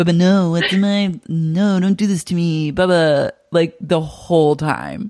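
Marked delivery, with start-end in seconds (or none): 0.0-3.3 put-on babyish voice. Imitating a reality show cast member talking the whole episode: imitating Tom Schwartz's Bubba voice. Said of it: "a Bubba voice".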